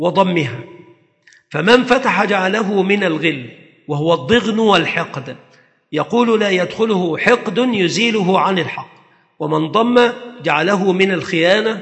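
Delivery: ordinary talk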